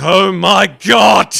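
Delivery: reflexive, very loud, shrill shriek of shock. Voicing a character who looks over an edge: screaming in shock. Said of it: "reflexively screams".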